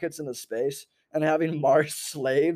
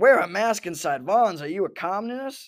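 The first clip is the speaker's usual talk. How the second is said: fake, put-on country accent; 4 semitones higher than usual. Speaker imagining what a Republican QAnon therapist would say, in a country accent. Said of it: "giving him like, you know, a country accent".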